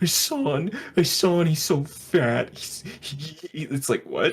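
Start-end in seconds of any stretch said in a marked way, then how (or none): 0.0-2.5 loud, high, slow, drawn-out whine. Retelling how Doctor Disrespect talks on his Twitch streams: imitating Doctor Disrespect whining. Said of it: "he's whining and he's going, like".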